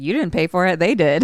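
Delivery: plain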